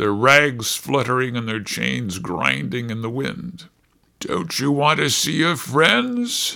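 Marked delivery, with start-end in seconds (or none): 4.2-6.6 contemptuous, sneering, scornful jeering. Taunting a pirate about his dead messmates; sneering. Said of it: "sneered Pluto".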